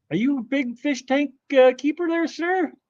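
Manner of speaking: excited voice jumping up, swooping high and rising. Asking the other person about big fish tanks, voice jumping high with excitement. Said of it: "Why did my voice go so high?".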